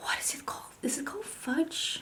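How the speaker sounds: unvoiced whisper.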